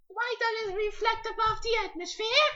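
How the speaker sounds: put-on very high-pitched small child's voice. Playing a child pestering someone with why-questions: very high-pitched child voice. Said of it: "I'm going to talk in a very high pitched voice".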